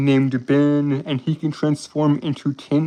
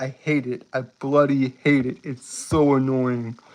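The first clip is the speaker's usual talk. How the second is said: usual speaking voice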